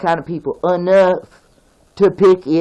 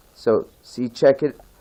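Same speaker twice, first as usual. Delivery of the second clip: ordinary talk, nothing marked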